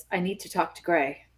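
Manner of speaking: very quiet, hushed, discreet voice. Retelling walking up to the counter to ask for someone, in a really quiet, subtle voice. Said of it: "in a really, really quiet, subtle voice".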